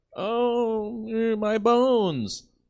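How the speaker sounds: very high-pitched, slow, drawn-out whiny moan. Mocking an orphan who keeps asking for gruel: imitating a whiny orphan. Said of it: "That fucking Twist brat".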